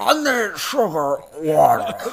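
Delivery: high, loud alien bug creature voice. Doing the film villain's line for co-hosts, Edgar the Bug impression. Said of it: "that's a great impression".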